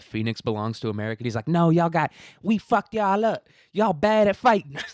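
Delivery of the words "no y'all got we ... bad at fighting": very high, bad yelling rant. Retelling a comedian yelling at an audience member: bad Katt Williams impression. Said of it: "that's not a good Cat Williams impression".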